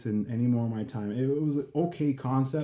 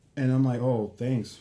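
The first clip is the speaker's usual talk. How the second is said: ordinary talk, nothing marked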